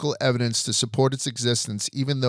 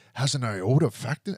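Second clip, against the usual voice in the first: put-on thick Scottish accent; 3 dB quieter than usual. Retelling a historian's remark about a film, in a really thick Scottish accent. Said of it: "in a really thick Scottish".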